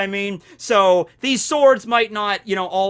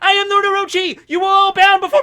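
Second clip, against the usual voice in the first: very high, loud character voice; 12 semitones higher, 5 dB louder than usual. Acting out a severed head speaking after decapitation: Orochi voice. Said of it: "Orochi's head was like".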